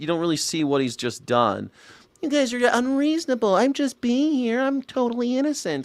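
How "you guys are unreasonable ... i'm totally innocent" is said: very high, innocent-sounding protesting voice. Mocking a filmed protester who plays innocent, mocking innocent voice.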